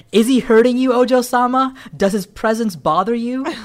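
high, loud shouting, every word yelled. Retelling a story's dialogue spoken in all caps: imitating Pocky-san shouting. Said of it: "all Pocky-san's dialogue's in all caps".

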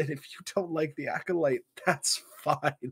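humorous, light, high-pitched laughing aside.

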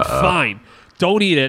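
mock fed-up outburst. Speaker retelling losing patience when she wouldn't eat her green pepper, retelling an angry outburst. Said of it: "I got so angry".

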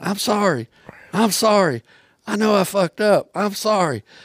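high, drawn-out scream, going on and on. Retelling how Wally chased after him on foot: imitating Wally screaming. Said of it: "he kept screaming and screaming and screaming".

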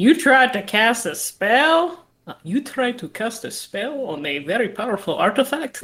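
slow, deliberate, stressed, disbelieving character cadence. Retelling what a character said to the group: imitating Mikhail's cadence. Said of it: "that's a great impression".

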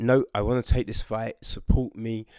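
ordinary talk

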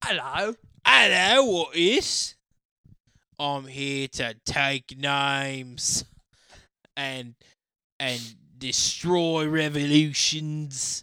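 put-on loud, heavy, very strong Cockney accent. Showing the others how a general sounded, in a Cockney accent. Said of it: "Just sounds like a very Cockney man".

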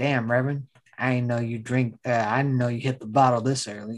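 put-on deadpan actor voice. Retelling an actor's line to a drinking reverend, in a McConaughey dead-serious impression. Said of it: "being dead ass serious the whole time".

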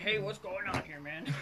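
laid-on, put-on manly guy voice. Retelling talking to the guy next to him: put-on man voice. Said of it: "I love that man voice just now".

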